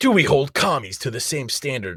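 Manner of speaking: theatrical dramatic reading. Reading aloud a comment someone found, in a dramatic reading voice. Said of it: "Read it in a dramatic voice".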